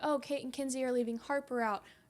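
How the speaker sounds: plain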